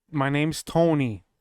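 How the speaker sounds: very deep voice, each word dragged out slowly. In a dinosaur role-play, the green dinosaur introduces himself, slow-talking Tony voice. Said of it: "He talks so slow".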